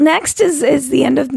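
slow voice cracking and breaking into demon sound. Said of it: "what happened to my voice?".

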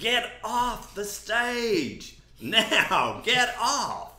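high, drawn-out screaming yell.

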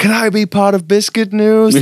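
brash, bold, very high American voice. Retelling how a visitor walked in and asked to join: impression of Jared's bold American manner. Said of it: "that's my impression".

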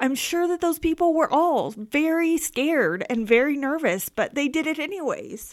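high, emotional, tearful crying voice. Talking with another person and overcome mid-conversation, crying while speaking. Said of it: "I'm crying".

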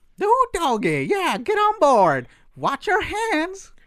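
pitch going way up high and swinging. Asked by others to give his own Prospector voice, Prospector voice. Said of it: "Give us your own Prospector voice".

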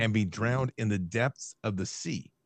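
plain

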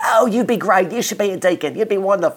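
put-on good British accent. Speaker retelling a man's reply when he mentioned the diaconate: great british accent. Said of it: "he said in a great British accent".

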